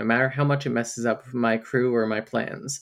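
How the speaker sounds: normal talking voice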